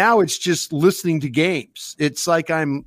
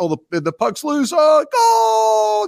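very high, swooping, swelling sports announcer call, building up; 11 semitones higher, 3 dB louder than usual. Describing how a radio hockey call builds: imitating a hockey announcer's rising call. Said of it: "the voice of the announcer as it goes, the crescendo of it gets louder".

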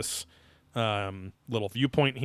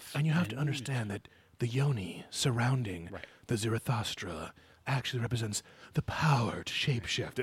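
soft, unsettling, sleazy, predatory man's voice; 5 dB quieter than usual. Imitating how a man on another episode talked, pedophile-like voice. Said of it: "he's like a pedophile voice".

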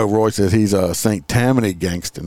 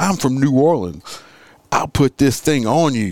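acted, high, boastful, menacing yelling; 6 semitones higher than usual. Retelling a news story about a man who shouted: imitating someone shouting. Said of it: "he shouted".

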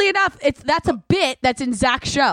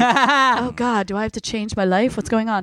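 ordinary talk, nothing marked

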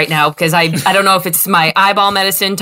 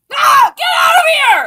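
shrill, very high-pitched, shouting shriek. Reacting to a visitor entering the hospital room: screaming. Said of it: "that's why I'm screaming!".

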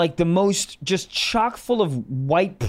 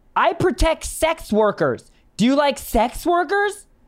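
sudden acted-out yell, high and drawn out; 9 semitones higher than usual. Retelling a woman in the crowd interrupting: imitating a woman yelling out. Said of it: "she just yells out out of nowhere".

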